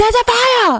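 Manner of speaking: very high, yelled-out alarmed voice. Describing people who catastrophize, imitating someone yelling. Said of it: "Stop yelling at me".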